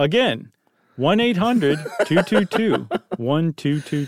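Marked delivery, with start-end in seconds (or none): 1.0-4.1 put-on commercial announcer delivery. Repeating the poison control phone number: mock tv commercial announcer voice. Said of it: "You gotta do it like a T V commercial".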